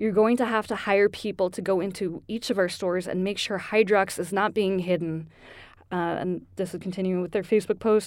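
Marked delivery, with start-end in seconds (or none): none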